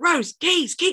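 put-on very high, desperate, frantic shouting. Recounting a film scene where he calls out to Rose, retelling a shout. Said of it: "He starts shouting".

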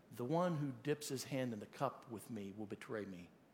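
hushed, quiet voice.

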